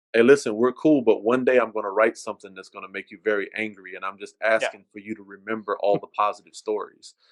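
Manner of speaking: ordinary talk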